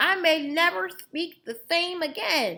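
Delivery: very high, toothless voice. Reading a story aloud, voicing Grandpa whose teeth were stolen: toothless voice. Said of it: "trying to make her voice sound like, um, somebody who doesn't have any teeth".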